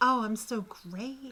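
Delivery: soft, smug, preening tone. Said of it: "That was my smug [name]".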